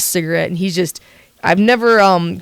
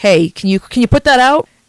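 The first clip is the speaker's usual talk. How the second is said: play-acted curt, blunt, unfriendly, unkind tone; 4 semitones higher, 3 dB louder than usual. Telling a story, acting out what a man said to a woman: retelling an unkind request. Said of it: "he doesn't do it very kindly".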